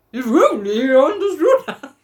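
fatherly voice ending on rising intonation. Reading the story aloud, doing the father's line: father voice, rising intonation. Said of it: "said the father with rising intonation".

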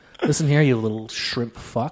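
low, quiet, cool, composed, calm menace. Retelling how a man threatened someone, imitating a calm, composed threat. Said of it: "he did it so calm and composed".

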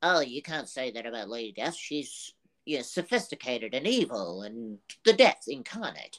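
put-on irritated, pissy nerd voice. Acting out a comic hater's reply, in a put-on pissy nerd voice. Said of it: "Your pissy nerd voice is perfect".

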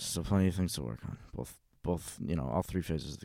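mock irritated indifferent voice. Imitating answers to a question while acting annoyed: Belichick impression, annoyed and emotionless. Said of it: "He's like".

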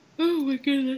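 very high voice stretched through a yawn. Tired speaker yawns mid-conversation and the other speaker asks them to stop; yawning. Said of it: "Stop yawning".

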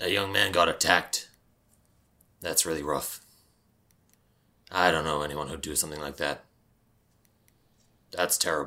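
sober, earnest, serious and grave tone. Voicing a character whose smile fades when asked about an attack: serious. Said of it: "his smile fades away and he looks very serious".

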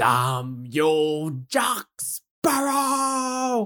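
very slow, high, drawn-out anguished wail, "you" stretched. Recounting a scene where he looks up to the sky, imitating Davy Jones screaming. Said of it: "looks up to the sky and screams".

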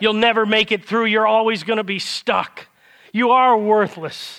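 put-on loud accusing voice. Preaching on how the devil condemns, voicing him: loud condemning devil voice. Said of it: "And he condemns".

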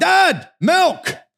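play-acted very high, angry, demanding child's yell. Retelling how a child yells at night for milk: imitating Trey yelling. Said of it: "he'll yell for milk".

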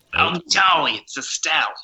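high-pitched sitcom agent voice. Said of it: "a bit more like Estelle from Friends".

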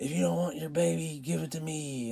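high shouting out. Telling a story of strangers yelling at the group, retelling a lady's yell. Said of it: "some other lady yelled".

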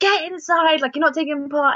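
mock teacher shout. Retelling how a second teacher ordered a child inside: imitating a teacher shouting. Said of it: "she just shouted his name".

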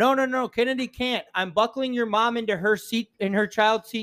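acted-out, very high-pitched, urgent, blurted yelled outburst. Retelling how Shayla yelled out while loading the car: imitating Shayla yelling. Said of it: "Shayla yells out".

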